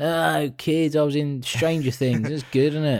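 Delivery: put-on acted drunk voice. Acting out a panto actor stumbling on stage: imitating a drunk actor. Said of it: "He's clearly still pissed".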